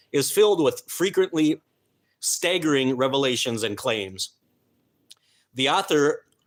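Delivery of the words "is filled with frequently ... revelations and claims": usual speaking voice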